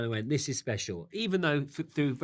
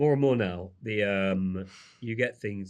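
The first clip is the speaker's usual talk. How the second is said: lowered, deeper speaking voice in new register; 5 semitones lower than usual. Speaker trying out a voice and asking if it's better, in a lower voice. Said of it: "I was speaking in a lower voice. Is that better?".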